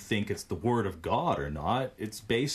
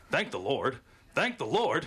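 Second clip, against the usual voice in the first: put-on character voice with big swooping pitch swings; 4 semitones higher than usual. Reading a quote from The Simpsons aloud in Superintendent Chalmers voice. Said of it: "You have to say it in his voice. / I'll try".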